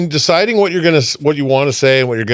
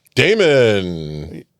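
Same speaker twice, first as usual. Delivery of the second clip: very deep, drawn-out put-on announcer voice; 7 semitones lower than usual. Podcast intro, a co-host saying his own name in his radio voice. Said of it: "I used my radio voice".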